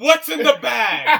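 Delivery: impression voice, stretched-out cry, very loud. Reacting to watching a scene with a bag: Brad Pitt impression. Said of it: "I'm fucking Brad Pitt watching it".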